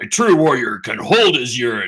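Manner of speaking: loud booming warrior voice. Retelling a joke line of Worf's in a Michael Dorn Worf voice. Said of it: "in the Michael Dorf voice and Dorn voice".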